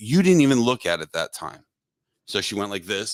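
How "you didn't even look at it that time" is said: put-on irritated man's heated angry outburst, high and swooping. Retelling a scene where he got mad again: imitating an angry man. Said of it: "he got mad again".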